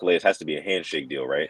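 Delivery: ordinary talk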